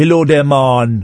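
mock, put-on Jamaican accent. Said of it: "they talk with the accent".

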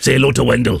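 ordinary talk, nothing marked

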